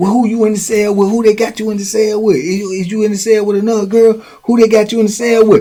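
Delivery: high, rising tone of jealous rage. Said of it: "his jealousy rage".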